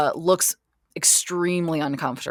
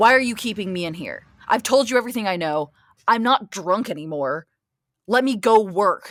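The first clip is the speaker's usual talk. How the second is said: furious, angry, railing rant; 4 semitones higher than usual. A character still railing against Concord: rail angrily. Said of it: "still just railing against Concord".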